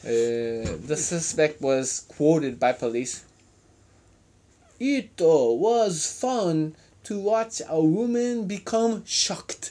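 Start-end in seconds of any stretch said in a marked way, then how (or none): 4.8-9.7 slow, attempted Japanese accent. Reading a suspect's quote aloud, attempting a Japanese accent. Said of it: "try more for a Japanese accent on the rest of the quote".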